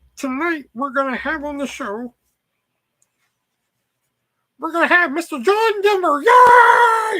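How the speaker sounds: very high, very loud frog puppet voice. Speaker tells a co-viewer they sound like Kermit, then does Kermit the Frog voice. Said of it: "you sound like Kermit D. Frog".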